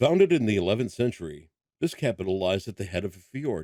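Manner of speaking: understated, subtle documentary-style narrator voice. Asked for a narrator voice, the speaker reads a line in narrator voice. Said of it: "you would like this in a narrator voice".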